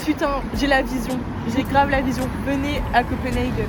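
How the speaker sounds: usual speaking voice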